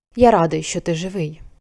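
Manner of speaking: muttered, mumbled, murmured. An old man speaks to the boy, muttered. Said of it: "пробурмотів він".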